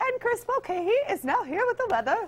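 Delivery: awful, queenly posh British accent, very high. After saying Australian and British accents differ, trying a bad British accent. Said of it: "I'll do a little bit of it. It's something, something like this".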